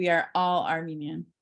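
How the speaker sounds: "all" hit hardest, heavy stress. Explaining where the emphasis falls in a phrase: stress on all. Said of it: "all, and that allness, that wholeness, is apparently in my mind the where the emphasis is".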